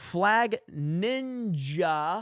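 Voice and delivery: very slow, deliberate, stretched-out, drawn-out delivery. YouTuber reading out comments, said very slowly. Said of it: "Just want to say that very slowly".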